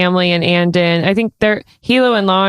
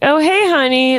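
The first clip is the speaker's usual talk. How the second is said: high, ditzy, foggy, airheaded voice; 7 semitones higher than usual. Acting out a mother greeting her returning child: airheaded voice. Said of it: "an airhead almost".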